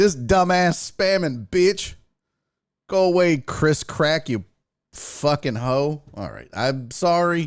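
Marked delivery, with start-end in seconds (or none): 0.0-6.0 aggressive, hostile lashing-out tone. Scolding someone spamming, telling them to go away, aggressive. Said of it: "That was aggressive".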